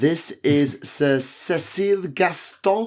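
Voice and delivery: slow, put-on French accent. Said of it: "I will keep up the French accent".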